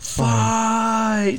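acted out, very high, stretched-out, drawn-out schoolyard shout. Retelling a schoolyard scuffle: imitating a loud playground shout. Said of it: "shouting at the rooftops".

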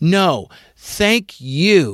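mock, almost aggressive tone, "you" drawn out. Retelling how Sue Blu thanked them back: imitating Sue Blu, almost aggressive. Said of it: "it was almost aggressive".

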